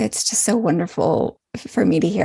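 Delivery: ordinary delivery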